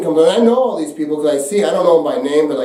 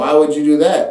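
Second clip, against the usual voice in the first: ordinary delivery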